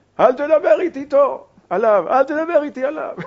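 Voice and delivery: put-on loud, high voice with heavy Moroccan accent. Retelling how a man's wife answered his phone call: heavy moroccan accent. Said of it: "אשתו עונה מצד השני ככה במבטא מרוקאי כבד".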